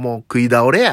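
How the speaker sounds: put-on Kansai dialect accent. Speaking Japanese about having eaten a lot: put-on Kansai accent. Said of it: "僕が関西弁喋ったのが新鮮で面白くなってきた".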